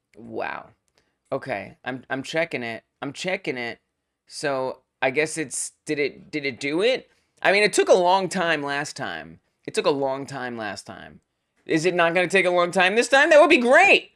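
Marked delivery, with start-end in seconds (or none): 11.7-14.0 very loud, fast, excited burst of yelling. Checking an output log live, waiting on the result: excited yelling. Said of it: "Sorry for yelling".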